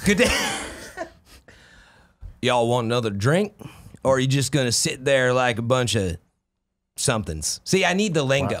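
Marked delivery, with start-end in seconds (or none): 0.0-7.6 put-on Wild West cowboy accent. Asked on stream for some of a cowboy accent, doing a cowboy accent. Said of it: "Give me some of your cowboy accent".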